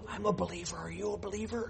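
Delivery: very soft, hushed, secretive whisper. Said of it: "why would you whisper to someone that".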